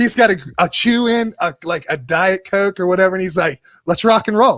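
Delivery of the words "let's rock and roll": put-on bright, cheerful, chipper early-morning voice. Retelling a client's words on arriving: imitating a chipper guy. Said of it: "he is the chipperest dude".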